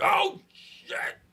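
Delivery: very high, strained, constipated-sounding yelp on "oh shit".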